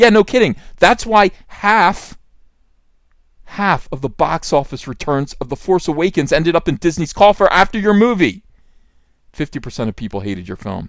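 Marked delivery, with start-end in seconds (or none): 0.8-8.4 loud, furious, angry raised-voice shouting. Ranting at a director who bragged about making divisive films, shouting angrily. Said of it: "I'm shouting at this point".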